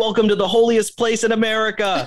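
very high, thrilled, excited shriek. Retelling what the campus minister said on the way up the hill, retelling a scream. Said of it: "she's just screaming, so stoked to be back on campus".

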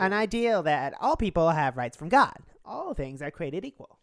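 lifted, nasal delivery. Repeating a quoted speaker's line: Ben Shapiro voice, slightly nasal and raised. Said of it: "slightly nasal, slightly raised voice that I can slip into".

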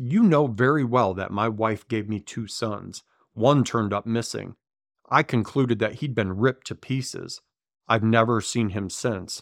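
plain

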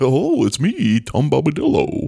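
sing-song character voice, pitch swooping up and down. Answering a question as Tom Bombadil: Tom Bombadil voice. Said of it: "Just gonna do it".

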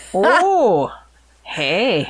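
put-on Canadian accent. Joking along after another speaker mentions Fargo: put-on Canadian accent. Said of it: "The right Canadian accent".

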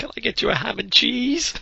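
very high, pitiful whimper, pitched way up. Describing a movie scene, the speaker acts out the man's reply, imitating a whimper. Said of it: "he just whimpers".

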